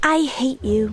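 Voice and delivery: smiling while speaking. Showing that listeners can hear a smile, spoken with a smile. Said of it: "if you speak with a smile, people know you're smiling ... Does that sound happy?".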